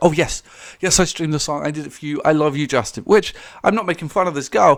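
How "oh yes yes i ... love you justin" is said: put-on sweet, adoring, gushing teen fan voice. Retelling a video call: imitating a sweet teen fan. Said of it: "She's like".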